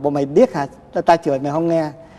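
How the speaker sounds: ordinary talk, nothing marked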